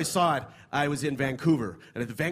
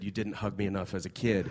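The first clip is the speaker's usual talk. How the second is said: acted deadpan delivery, lower pitch; 5 semitones lower, 4 dB quieter than usual. Speaker retelling their reply after she showed them the notebook, acting out a deadpan remark. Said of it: "I looked at her deadpan".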